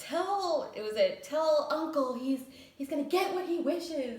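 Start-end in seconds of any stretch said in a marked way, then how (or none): 1.2-4.2 put-on defiant teenager yell, higher. Retelling a scene where Ross leaves and yells: imitating Ross yelling like a defiant teenager. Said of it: "and like a defiant teenager".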